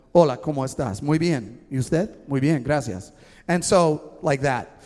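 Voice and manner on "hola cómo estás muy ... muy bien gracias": put-on smooth, fluent Spanish accent. Retelling a conversation with a group of people in Ecuador, using a cool Spanish accent. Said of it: "I entered the conversation with my cool accent".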